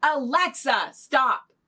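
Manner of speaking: put-on loud, high shouted yell. Retelling yelling at Alexa to stop the alarm: imitating own yell. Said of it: "And so I'll yell".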